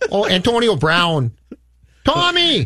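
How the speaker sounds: put-on Boston accent with very slow, swooping drawl. Joking about Tommy and Antonio Brown: put-on Boston accent. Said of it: "your Boston is very Bronx".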